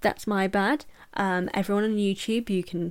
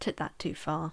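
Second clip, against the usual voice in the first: ordinary talk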